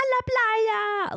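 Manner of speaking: very high, shrill holler with "la" drawn out. Retelling an old man in Spain yelling at them, imitating someone yelling. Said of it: "he like yelled at us".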